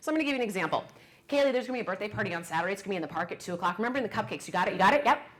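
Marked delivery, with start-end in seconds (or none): 1.3-5.0 way-too-fast, rushed, rattled-off run-on delivery. Giving an example of instructions to someone, talking way too fast. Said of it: "We talk way too fast".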